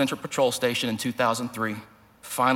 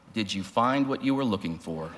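mock-stern, steady, clear, firm officer voice; 3 semitones lower, 4 dB quieter than usual. Retelling the question Mike asked the speaker, imitating his clear, firm voice. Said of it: "In a clear, firm voice".

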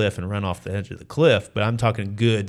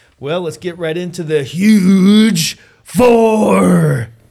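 very high, very loud ring-announcer hype, "four" drawn out; 10 semitones higher, 11 dB louder than usual. Opening the next round of questions for the guests in a wrestling voice. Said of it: "It's my wrestling voice".

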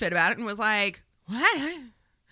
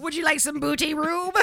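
put-on pirate voice, pitched up; 7 semitones higher than usual. Acting out a pirate recruiting a ballplayer: imitating a pirate. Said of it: "Recruits him. He was like".

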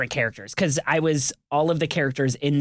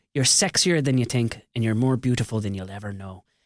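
fake Irish accent, lower pitched; 4 semitones lower than usual. Retelling a line told to a girl to impress her: put-on irish accent. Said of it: "the last time I used an Irish accent to impress a lady".

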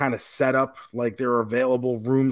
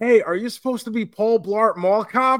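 put-on loud, pitched-up girl voice. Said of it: "some girl goes".

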